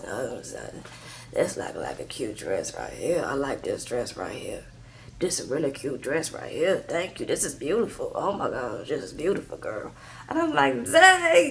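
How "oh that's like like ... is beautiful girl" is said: very soft, deep, breathy chain-smoker voice. Retelling a scene, the speaker imitates Angela's deep smoker voice. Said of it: "Angela has a really deep smoker voice".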